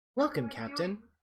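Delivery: high computer voice. Speaking as the computer greeting the captain: Mother's ship computer voice. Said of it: "you hear Mother's voice again".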